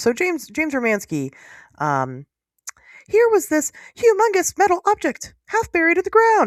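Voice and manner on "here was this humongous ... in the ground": very high, squeaky cartoon voice. Giving James Romansky's account in his excited voice, in a Mickey Mouse-like voice. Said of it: "it kind of sounds like Mickey Mouse".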